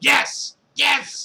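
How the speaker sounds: very high, heated, insistent shouting. Telling about a night in a hot tub, acting out someone getting heated. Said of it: "Josh was getting like heated at it".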